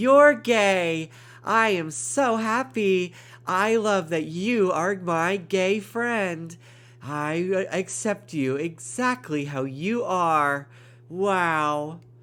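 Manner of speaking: put-on earnest yet sarcastic-sounding "wow", drawn out, high. Imagining how a friend would react to a coming out: imitating someone who sounds sarcastic. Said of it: "everything she says sounds so sarcastic".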